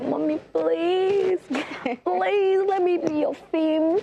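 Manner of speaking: very high-pitched, pleading, begging voice. Retelling begging mom to let her act: imitating own begging. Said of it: "beg my mom".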